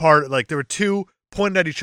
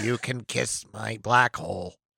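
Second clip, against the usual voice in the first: put-on computer speech voice; 5 semitones lower, 8 dB quieter than usual. Joking about an AI voice mixing E.T. and Stephen Hawking: E.T. in a Stephen Hawking voice. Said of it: "an A I combination of E T and Stephen Hawking".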